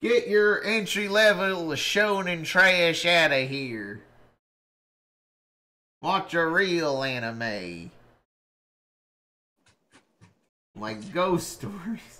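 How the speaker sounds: really broad, thick, exaggerated American Southern accent. Host talking about anime, in a really southern voice. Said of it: "I love talking about anime in a really southern voice".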